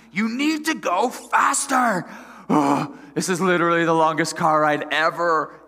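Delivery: play-acted high, loud, nasty, impatient yell. Retelling a car ride, the speaker quotes a woman yelling at them: retelling her yelling. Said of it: "She's like yelling at me".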